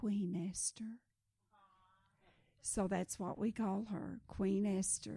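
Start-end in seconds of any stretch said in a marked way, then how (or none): 0.0-1.0 tiny little voice, much quieter. Retelling a rescued girl answering the director's question, imitating a tiny little voice. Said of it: "In this tiny little voice".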